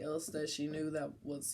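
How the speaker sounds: ordinary talk, nothing marked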